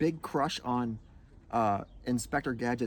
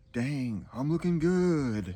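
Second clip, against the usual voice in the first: deliberate slow drawl, good drawn out. Doing impressions when asked what he says: Duke Nukem voice. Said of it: "Those are all Duke Nukem".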